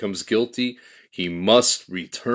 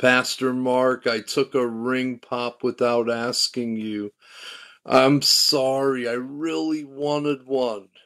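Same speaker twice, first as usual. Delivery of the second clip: acted, slow, weeping little girl voice; 3 semitones higher than usual. Retelling a little girl's apology after church: imitating a weeping child. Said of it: "And she was weeping".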